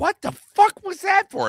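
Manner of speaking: high, loud startled yelp.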